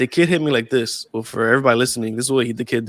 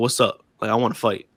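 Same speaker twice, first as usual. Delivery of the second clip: grave, serious delivery; 2 semitones lower than usual. Retelling a kid challenging him to fight, imitating a dead serious challenge. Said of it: "dude is dead serious in front of me".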